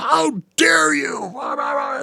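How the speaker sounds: very high, shrill, drawn-out screaming. Retelling how a record label rep came in: imitating someone screaming. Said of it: "comes in screaming at me like".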